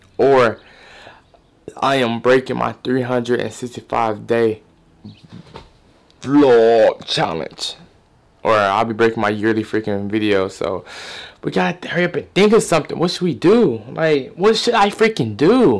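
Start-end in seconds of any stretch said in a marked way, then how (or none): 10.5-15.8 exasperated, frustrated, at the end of the rope, high voice. Rushing to find a video idea before the daily upload deadline: frustrated. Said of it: "I'm frustrated".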